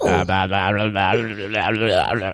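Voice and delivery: low, mumbled put-on babble. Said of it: "I was going with Farmer Fran from Waterboy".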